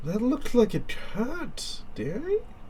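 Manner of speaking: creepy, high, soft doting voice.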